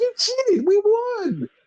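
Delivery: play-acted, overjoyed, thrilled gush, very high-pitched. Retelling a wrestling match's finish, imitating Candice sounding so happy. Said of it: "And Candice is so happy. She's like".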